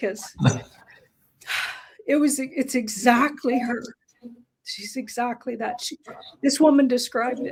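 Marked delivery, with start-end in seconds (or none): 2.1-7.5 tearful voice, close to crying. Speaking in a group conversation, close to tears. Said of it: "I'm gonna cry".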